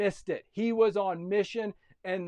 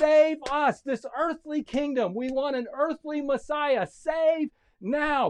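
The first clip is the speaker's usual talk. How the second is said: mock crowd yelling, higher pitch; 7 semitones higher than usual. Retelling what the crowd shouted about the messiah, imitating a crowd yelling. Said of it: "And they started yelling".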